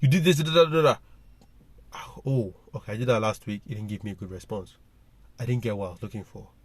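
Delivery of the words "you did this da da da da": put-on shouting, much higher, louder. Describing how they go at their partner when upset, retelling a shout. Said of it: "I go shouting like".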